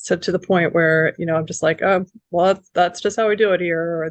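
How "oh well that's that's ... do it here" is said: put-on sarcastic, apathetic tone. Retelling own past burnout attitude at work: imitating own sarcastic apathetic tone. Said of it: "this really kind of sarcastic, apathetic attitude".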